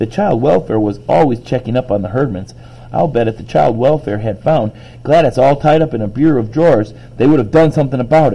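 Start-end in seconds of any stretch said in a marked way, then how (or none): none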